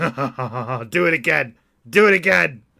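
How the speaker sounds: very loud, slow, drawn-out laughter into words. Knocked down by a gunner, Jim laughs and urges him on: laughing. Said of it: "he's smiling and laughing".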